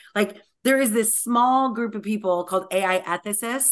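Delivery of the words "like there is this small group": usual speaking voice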